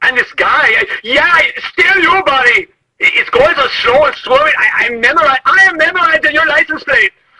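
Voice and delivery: shrill, very high-pitched hollered yelling. Yelling at a slow, swerving driver while on the phone: yelling. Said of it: "I know you know I'm yelling".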